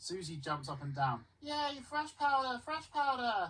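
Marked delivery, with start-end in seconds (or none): 1.4-3.5 sweet, very high, cute little cheer. Reading a story aloud, voicing an excited young girl: cute voice. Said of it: "she says in a cute voice".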